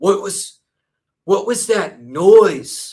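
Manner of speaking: obviously fake, badly acted, high and slow. Mocking a YouTuber's bad acting in a video: Colton impression. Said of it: "That's my Colton impression".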